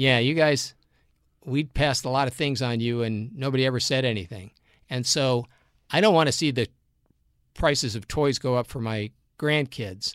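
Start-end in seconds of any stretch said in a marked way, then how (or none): none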